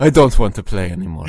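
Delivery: put-on loud, with a lilting Spanish accent. Repeating the football player line with a slightly spanish accent. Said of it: "he's a little bit Spanish".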